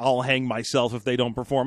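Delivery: plain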